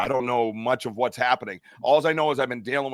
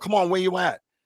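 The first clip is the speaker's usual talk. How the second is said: mock loud, pitched-up yelling; 6 semitones higher than usual. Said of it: "And I'm yelling out to the woods".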